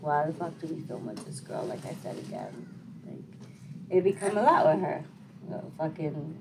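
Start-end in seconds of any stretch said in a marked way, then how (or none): none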